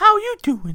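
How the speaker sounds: loud belted singing, squeaky and bad. Describing the voices they do, speaker demonstrates a very crappy Mickey Mouse voice. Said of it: "I could do a very crappy Mickey Mouse voice".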